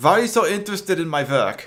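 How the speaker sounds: high, put-on evil scientist German accent. Voicing an evil scientist questioned by the NYPD, German evil scientist accent. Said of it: "I need to remember how to actually do a German accent".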